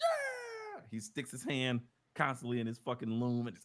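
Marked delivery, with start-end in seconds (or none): 0.0-0.8 very high, long, drawn-out triumphant whoop. Retelling how the character reacts to each success: imitating a triumphant shout. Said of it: "That's literally what happened".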